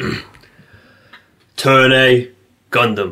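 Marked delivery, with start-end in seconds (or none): 1.6-3.1 loud, high-pitched put-on announcer callout. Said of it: "give us your best Turn A Gundam, like the guy in the opening".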